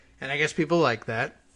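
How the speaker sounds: plain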